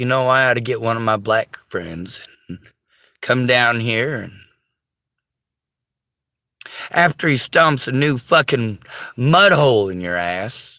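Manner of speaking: ordinary talk, nothing marked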